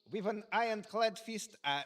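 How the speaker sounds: fake Russian accent. Speaker tries accents on lines in turn, Russian accent. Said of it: "That is Russian, no?".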